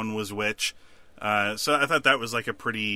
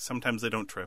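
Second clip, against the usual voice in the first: put-on deadpan delivery, much quieter; 6 dB quieter than usual. Recapping a scene where a man answers Strand, retelling a deadpan reply. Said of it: "just deadpanned".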